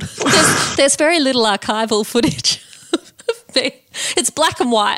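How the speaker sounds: teasing, grave, overly serious documentary-style tone. Teasing the other speaker by repeating their words: mock-serious imitation of the other speaker. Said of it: "You make it sound like you're a hundred years old".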